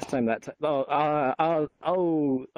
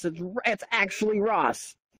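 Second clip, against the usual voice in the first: mock sarcastic tone, higher pitch; 6 semitones higher than usual. Retelling a joke about meeting someone online: imitating own sarcastic tone. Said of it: "I'm doing my comedy bit of".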